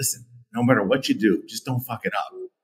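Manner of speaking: soft, confidential, half-whispered aside. Retelling a warning to a new sales guy before a call: imitating own past half-whisper. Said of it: "I leaned to the guy and whispered".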